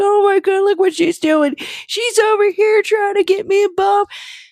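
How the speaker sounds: weepy, tearful, high-pitched crying rant. Retelling a complaint after a tweet about him: imitating Liam crying. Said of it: "he had a crying spree about it".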